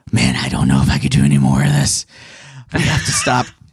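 put-on low, gravelly voice of an old war veteran. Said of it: "gravelly voice".

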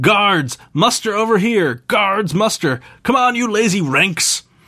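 high-pitched, bellowing giant voice shout. Narrating a scene, voicing a towering half-giant calling the guards: bellowing half-giant voice. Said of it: "a towering half-giant consults a parchment and bellows".

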